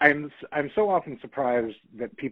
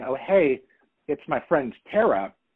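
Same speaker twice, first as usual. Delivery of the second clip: plain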